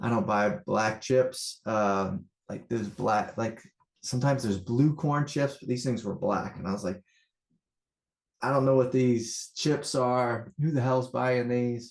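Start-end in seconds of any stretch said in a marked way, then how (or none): 8.4-11.9 put-on half-hearted, mild yelling. Retelling a mix-up with the chips at the store: imitating his own yelling. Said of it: "Starting to yell at my daughter".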